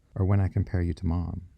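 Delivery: ordinary delivery, nothing marked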